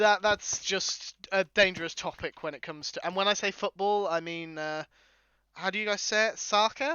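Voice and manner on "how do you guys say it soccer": terrible fake American accent, pitched up. Asking how Americans say football, in a terrible American accent. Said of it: "probably a terrible American accent".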